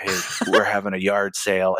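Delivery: steady, even, flat monotone with no lift. Retelling how Topher announced a good eShop week: imitating Topher's even tone. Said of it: "he speaks at a very even tone".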